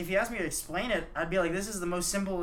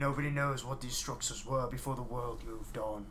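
very low, quiet, flat deadpan; 7 semitones lower, 5 dB quieter than usual. Recounting a movie scene, mimicking the reply to a kid as a mock-deadpan Idris Elba line. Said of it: "Idris Elba like deadpans like".

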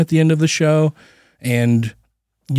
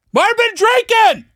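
shouting, pitched higher. Reading out a supporter's name in a list: yelling a name. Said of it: "I don't know why I yelled it".

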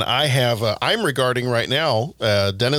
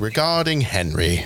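affected, playful put-on British accent; 2 semitones lower than usual. Saying a title for no particular reason in a put-on British accent. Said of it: "makes me want to say it in a British accent. Like".

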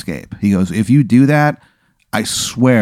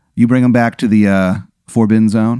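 normal talking voice

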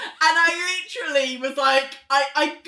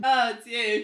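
mock bored tone, lower; 6 semitones lower, 4 dB quieter than usual. Retelling how a character reacts on seeing someone: imitating a bored reaction. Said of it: "like she's bored".

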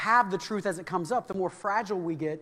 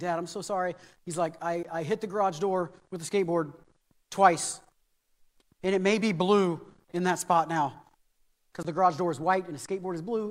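ordinary talk, nothing marked

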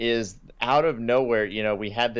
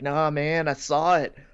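put-on stoner voice; 5 semitones higher than usual. Retelling a film scene, quoting a character who reappears: stoner voice. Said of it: "he suddenly has like a stoner voice".

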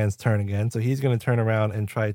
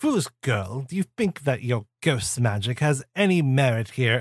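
put-on English accent throughout. The narrator voices a foe deflecting a girl's chi blast: British accent. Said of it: "he's British".

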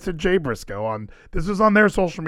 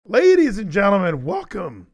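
voice cracking and breaking, pitched high; 6 semitones higher than usual. A host opens the show while sick, voice cracking. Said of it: "my voice cracked".

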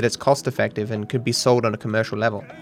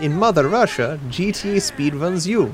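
higher-pitched, bad fake Russian accent. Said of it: "No, I can't do it".

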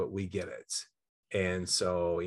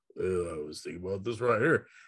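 deep baritone voiceover voice. Demonstrating the voiceover he wants every time he talks: Marcellus Wallace deep baritone. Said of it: "it's really deep baritone".

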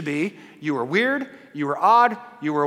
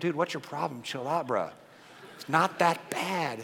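soft, easygoing, unbothered, laid-back voice; 7 dB quieter than usual. Voicing the calm twin watching his brother, imitating a very chill baby. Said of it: "the chillest human alive".

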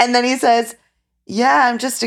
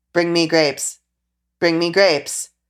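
deadpan, fully flat monotone with zero inflection; 2 semitones lower than usual. Retelling a groom in the bath at the honeymoon hotel calling to his bride, imitating a flat monotone. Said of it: "Fully monotone is like".

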